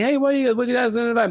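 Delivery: play-acted innocent casual tone. Retelling walking up to a girl, imitating himself asking innocently. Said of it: "as very innocently".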